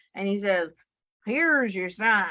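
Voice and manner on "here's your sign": comic put-on country accent. Quoting a country comedian's catchphrase, imitating a country accent. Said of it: "he has a country accent".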